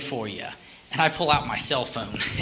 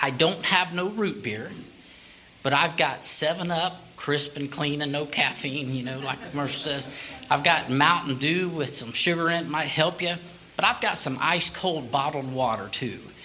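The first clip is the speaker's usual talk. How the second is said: plain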